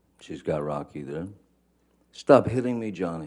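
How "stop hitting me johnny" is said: upset, freaked-out, high-pitched screaming. Recounting her screaming at Johnny from twenty feet away, imitating Miss Heard's freaked-out, upset, high-pitched scream. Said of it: "in her best um, freaked out, upset voice, high pitched".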